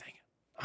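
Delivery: unvoiced, whispered, grumbling voice.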